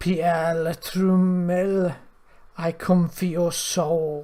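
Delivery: hollowed-out, empty sound to the voice. A severed head carried under a creature's arm speaks to the party, in a hollow voice. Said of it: "A hollowed voice says".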